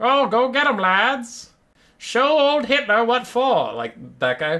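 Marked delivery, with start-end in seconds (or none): 0.0-3.7 very high, cheery, upbeat nineteen-twenties old-timey put-on voice. Pretending to be one of those old 1920s types, upbeat 1920s put-on voice. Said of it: "the nineteen twenties voice".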